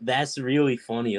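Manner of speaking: normal talking voice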